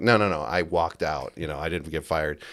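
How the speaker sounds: usual speaking voice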